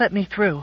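breathless, out-of-breath, high cry. A woman forcing her way through a crowd while a loudspeaker calls her: cried breathlessly. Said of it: "she cried breathlessly".

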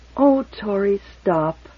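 tired, drained, worn-out voice. She answers Tori, who asks what is wrong with her, wearily. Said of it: "she said wearily".

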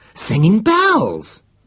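thrilled, very high-pitched, loud excited exclamation. The extraterrologist breaks into another scientist's report: great excitement. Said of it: "put in the extraterologist in great excitement".

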